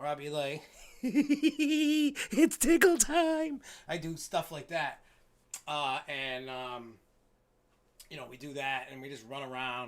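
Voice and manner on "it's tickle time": shrill, very high, full-volume clown voice. Describing how they scare people, the speaker demonstrates their clown voice. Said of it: "perfecting my clown voice".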